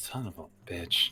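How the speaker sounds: muttered under breath. In a tabletop game, a player looks left and speaks in character: muttered under breath. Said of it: "mutter under my breath".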